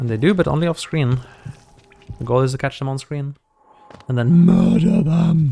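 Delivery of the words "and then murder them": slow, loud, monstrous demonic voice. While playing a game, speaker says a line in a demon voice. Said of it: "Sorry for the demon voice".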